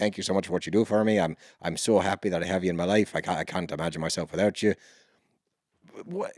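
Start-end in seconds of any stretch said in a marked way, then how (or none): 0.0-4.7 mock stoic, flat, unemotional delivery. Retelling a stiff heartfelt message from Paulie: imitating Paulie, stoic and stiff. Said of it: "The guy's got the most stoic face ever".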